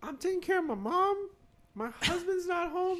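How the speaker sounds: put-on old lady voice, very high and slow. Retelling what an old lady said at the door: imitating an old lady. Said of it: "She sound like that?".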